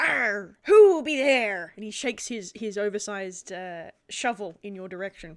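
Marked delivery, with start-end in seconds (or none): 0.0-1.7 stagey, loud, drawn-out pirate voice. Voicing a pirate who spins around after hearing a twig snap: pirate voice. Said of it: "the pirate spins around, and he's like".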